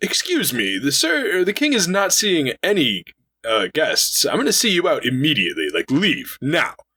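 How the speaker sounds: very high, swooping, rude dismissive tone. Retelling how a character turns away visitors to the king, imitating a rude dismissal. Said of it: "Like he is very rude".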